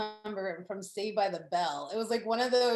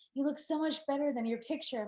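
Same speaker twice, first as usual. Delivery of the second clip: hushed stage whisper, high and soft; 5 semitones higher, 3 dB quieter than usual. Retelling what he said on their first meeting: imitating a half-whisper. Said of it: "he kind of whispers".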